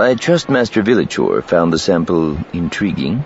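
ordinary delivery, nothing marked

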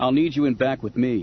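ordinary delivery

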